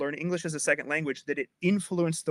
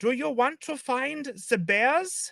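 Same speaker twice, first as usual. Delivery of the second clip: high German accent; 9 semitones higher than usual. Explaining how a german would speak english: stereotypical german accent. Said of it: "a German accent, they will say things like this".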